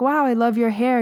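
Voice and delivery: genuine, kind tone. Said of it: "you're not being like".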